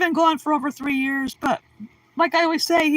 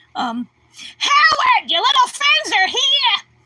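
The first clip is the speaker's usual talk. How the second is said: very high, loud, slow, drawn-out sing-song holler; 10 semitones higher, 5 dB louder than usual. Running through a list of TV character impressions, Mrs. Wolowitz impression. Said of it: "Wallowitz impression, the woman you never saw but always heard".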